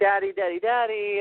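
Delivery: ordinary talk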